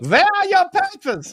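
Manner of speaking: very high, put-on German accent. Asked if he's practicing the german accent, the speaker jokes in it: german accent. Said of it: "Are you practicing the German accent?".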